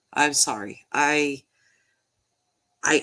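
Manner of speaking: choked-up, emotional voice. Speaker stopping to collect thoughts about a case that grabbed them, choked up. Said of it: "I'm not even sure why I'm so emotional".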